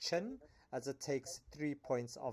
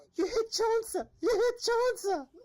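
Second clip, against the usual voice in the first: shrill, very high-pitched, very loud shriek; 11 dB louder than usual. Narrating a combat turn to a player, then Zanzibar's high-pitched voice. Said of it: "very um, high pitched voice".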